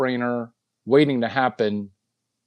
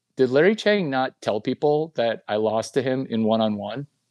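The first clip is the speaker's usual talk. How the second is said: ordinary talk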